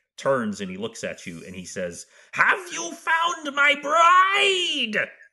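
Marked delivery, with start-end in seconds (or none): 2.4-5.1 enraged king voice, very high, shrill, very slow, drawn out. Narrating the scene, speaker voices the king turning to the players, incoherent with rage. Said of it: "who is just incoherent with rage".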